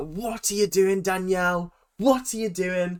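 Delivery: exasperated, fed-up outburst, held in. Recalling yelling at the tv at a contestant on a show; retelling yelling at the tv. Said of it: "I literally yelled at my TV".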